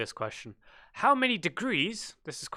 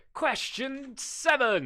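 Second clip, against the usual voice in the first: bright, pitched-up, forced, showy fake excitement; 7 semitones higher than usual. Reading out a quiz question, trying to sound excited. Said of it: "You're trying to sound excited there".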